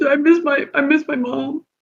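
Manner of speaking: acted tearful voice. Playing a character who tears up thanking the group: crying in character. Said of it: "he's crying".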